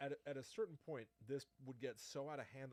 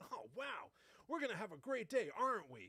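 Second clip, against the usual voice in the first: put-on high, loud, rambunctious old-timey boy voice; 9 semitones higher, 6 dB louder than usual. Showing the voice done for a child: old-timey rambunctious young boy voice. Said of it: "a rambunctious young boy from some day gone by".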